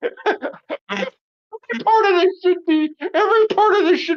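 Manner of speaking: very high voice, choking back laughter. Reading a text aloud, the speaker tries to read while stifling laughter. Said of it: "I'm trying to read this without laughing".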